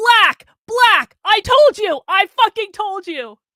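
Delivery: high, loud, gloating, triumphant yell.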